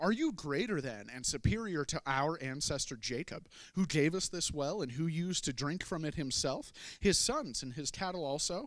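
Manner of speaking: ordinary talk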